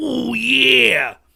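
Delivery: rough, very loud, high bellow, stretched ending. Showing off impressions as a joke: Macho Man impression. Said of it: "I could do Macho Man".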